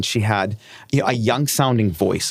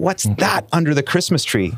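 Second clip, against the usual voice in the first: put-on angry, high, demanding, accusing tone; 6 semitones higher than usual. Retelling an ad line that a wife voiced: imitating an angry tone. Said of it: "she's got an angry tone".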